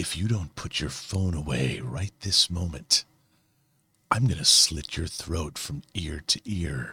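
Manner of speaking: low, hushed, quiet tough-guy voice. Telling someone to put their phone away right now, in a Clint Eastwood voice. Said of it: "adopt my Clint Eastwood voice and say".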